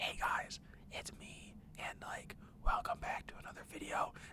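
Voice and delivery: hushed, barely audible near-whisper. Imitating own first video intro, heard under the game: imitating own quiet voice. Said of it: "probably quieter than that".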